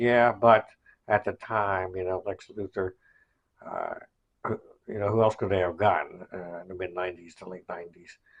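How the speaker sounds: ordinary delivery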